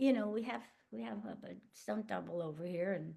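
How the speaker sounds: put-on hushed voice. Retelling a question about a stunt double, imitating Zach speaking very quietly. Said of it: "Zach kind of at one point very quietly said".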